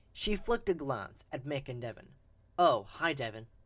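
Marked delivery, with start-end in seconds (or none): 2.5-3.4 sarcastic, much slower, sharp heavily stressed syllables. Reading a character's greeting to another character, sarcastic with sharp heavy syllables. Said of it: "the sharp and heavy tones on each syllable of his name represented sarcasm".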